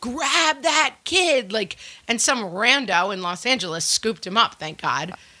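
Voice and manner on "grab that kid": put-on screaming, pitched high. Retelling chasing a runaway toddler in ice skates: retelling screaming at strangers. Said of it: "I'm basically just screaming at anyone".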